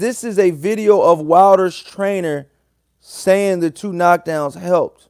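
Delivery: ordinary talk, nothing marked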